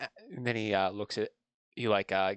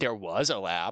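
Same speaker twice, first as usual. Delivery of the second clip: heavy stress leaning hard on the word was. Answering whether there was a lab in Dakar: stress on was. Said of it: "emphasis on the word was".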